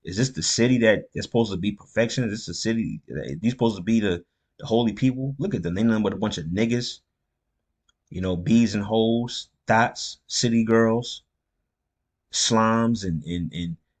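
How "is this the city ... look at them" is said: ordinary talk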